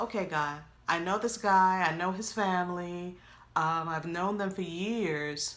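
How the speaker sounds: normal talking voice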